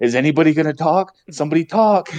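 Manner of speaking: mock freaked-out, high, frantic calling out. Retelling someone on Discord reacting when the audio went silent: imitating someone freaking out. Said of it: "Mike's in Discord freaking out".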